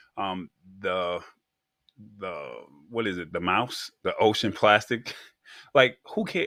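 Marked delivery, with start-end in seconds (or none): 5.7-6.4 high, loud dismissive tone. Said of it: "watch your tone now".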